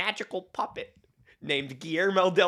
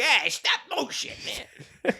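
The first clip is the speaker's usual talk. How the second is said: put-on Boston accent, much higher pitch; 7 semitones higher than usual. Quoting the director of Pinocchio, as Guillermo del Toro with an unexplained Boston accent. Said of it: "I don't know why Guillermo del Toro has a Boston accent".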